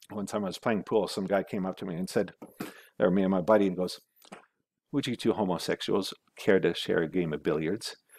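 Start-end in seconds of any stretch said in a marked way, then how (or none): 4.9-8.0 imitated flat, deadpan delivery. Telling of a man at pool asking him and a buddy to play: imitating a deadpan delivery. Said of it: "calling us homosexuals to our face with a total deadpan".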